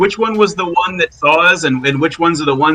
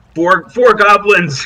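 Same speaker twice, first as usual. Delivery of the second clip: carrying, loud yelling shout; 4 semitones higher, 3 dB louder than usual. Yelling back out of a cave to warn the others: yelling out of a cave. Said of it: "I'm gonna yell back out of the cave".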